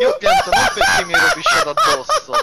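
laughing hard, high and loud.

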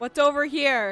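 loud yelling. Asked to speak louder, repeating the question in a loud voice. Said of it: "That's yelling".

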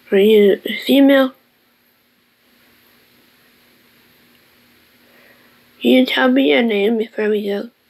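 still trembling, shaken voice. Questioning someone who was electrocuted on the ship about their name; shaken. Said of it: "I'm still shaking a bit".

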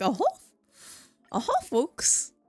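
classic cartoon mouse character voice. Imitating how another speaker sounds: Mickey Mouse voice. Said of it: "Clocky just sounds like Mickey Mouse".

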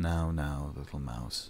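very quiet, low, flat, emotionless monotone. Reading a novel aloud, voicing the man answering her, flat and emotionless. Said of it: "his tone entirely flat and emotionless".

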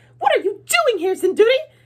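shrill, very high-pitched, loud cry. Narrator reading the stepmother's question to sinduri, in a shrill voice. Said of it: "say in a shrill voice".

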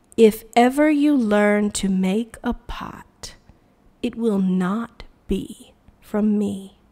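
slow, unhurried, measured, deliberate words. Narrator reading Min's reply to the orphan Tree Ear, slowly. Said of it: "Min said slowly".

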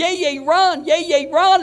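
mock, very slow, high, stretched-out drawn-out yell. Retelling how she came in and yelled at him to run: imitating someone yelling. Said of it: "she starts yelling at me".

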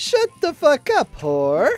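very high-pitched, swooping, thick Italian accent. Imagining Mario saying a rude line: Mario voice. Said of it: "in the most Italian accent ever".

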